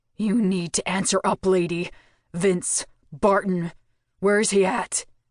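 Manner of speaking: growling, demanding voice. A narrator reads Mako's demand after he kicks at the floor; growling voice. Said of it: "a growl tinged his voice".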